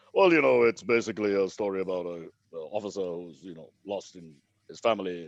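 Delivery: very low, deep baritone. Retelling an actor describing the film's plot: imitating Amitabh Bachchan's baritone. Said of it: "that most famous baritone in India goes".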